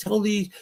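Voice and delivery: high-pitched yell, calling out far. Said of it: "he yells out at Jay".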